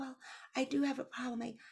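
barely audible, high and very soft. Imitating the young woman who got the lead, in a barely audible voice. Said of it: "she speaks like this and you could barely hear her".

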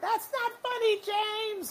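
put-on very high, slow, drawn-out shout. Retelling how a guest star shouts into the dark: imitating someone shouting. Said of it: "she just shouts out into the dark".

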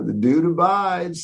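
relaxed, easygoing delivery in a very high voice. Describing how an actor's voices differ by role: Jeff Bridges as the Dude, laid back. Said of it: "So he's a little bit more casual, laid back".

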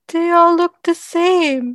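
put-on weird, loud, babyish voice, very high pitched. Recapping a scene, the speaker quotes a character in his little weird baby voice. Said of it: "in his little weird baby voice".

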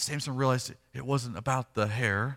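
normal talking voice

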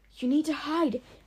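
high, hissed, urgent tone. Reading a story aloud, one character speaks to another, hissing. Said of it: "Ivory Whisper hissed".

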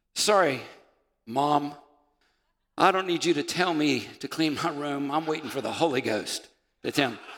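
put-on kid's voice. Imitating a child who refuses to clean their room: imitating a child. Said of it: "can you imagine our kids when they're growing up?".

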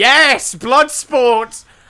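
shrill, ear-splitting, creature-like scream. Imagining humans made to fight, voicing Charizard screaming. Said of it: "a Charizard there screaming".

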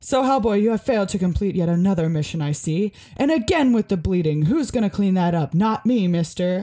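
put-on big booming voice. Discussing a game, the speaker performs a character's first line in a booming Tom Manning voice. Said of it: "he's like got this great booming voice".

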